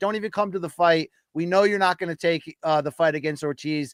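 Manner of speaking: ordinary delivery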